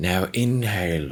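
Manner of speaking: Australian woman's accent. Showing the voice the speaker uses for yoga: australian woman's accent. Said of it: "I changed it up to like this Australian lady".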